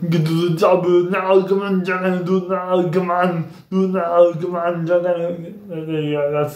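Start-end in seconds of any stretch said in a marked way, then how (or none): 0.1-5.0 put-on Austrian accent, pushed out. Showing a set of voice impressions, starting with an Arnold impression. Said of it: "the first one I'm gonna do is Arnold".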